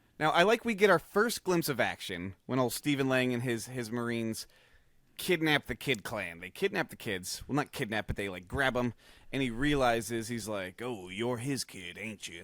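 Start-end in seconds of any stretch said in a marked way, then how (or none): 10.8-12.4 deep, dropped, low commander voice. Retelling a movie scene where Marines grab the kids: Stephen Lang impression. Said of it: "That's my Stephen Lang impression".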